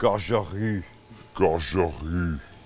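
put-on French accent on gagerie. Joking about how a cooking word is said in France: mock French accent. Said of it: "Or as we say in France".

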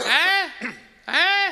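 high, loud calling out.

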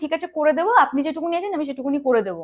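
normal talking voice

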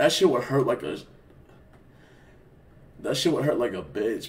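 tearful. Speaker talking about hating themselves, crying as they speak. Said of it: "Bro, I'm fucking crying".

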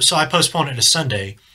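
normal talking voice

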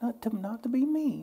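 mock sugary, very high, sweet voice. Retelling what a friend said about weight: imitating a sweet voice. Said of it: "She says it like".

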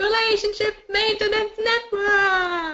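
very high, chirpy, perky game show hostess voice. Opening a pretend game show for the audience, in a game show hostess voice. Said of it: "This is your hostess with the mostest".

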